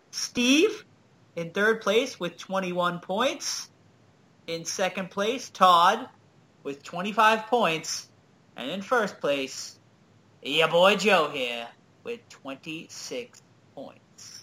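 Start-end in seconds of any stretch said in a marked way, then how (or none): 10.4-14.4 Boston accent, higher pitch. Announcing the trivia standings to the others: Boston accent coming out. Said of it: "your Boston accent comes out when you say".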